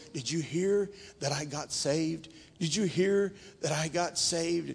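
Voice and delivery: frail, feeble, weak, low, soft voice. Recalling his dad speaking to visitors in his room, imitating dad's weak voice. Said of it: "in his weak voice".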